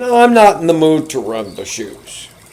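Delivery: put-on swooping childlike whine. Retelling what a coworker said when asked to run shoes: imitating a coworker sounding like a fifth grader. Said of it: "She sounds like a fifth grader".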